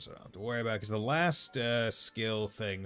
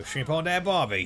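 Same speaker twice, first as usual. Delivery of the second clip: put-on Australian accent, much higher; 8 semitones higher, 8 dB louder than usual. Showing off the accents they slip into, Australian accent. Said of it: "I auto go to like Australian".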